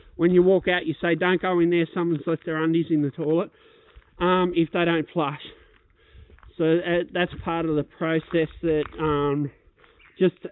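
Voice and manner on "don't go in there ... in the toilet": normal talking voice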